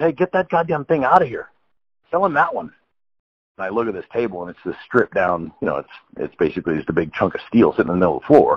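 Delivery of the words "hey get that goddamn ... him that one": put-on very high, rising yell. Telling a story, the speaker quotes one of the guys: retelling a guy yelling out. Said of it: "one of the guys yells out".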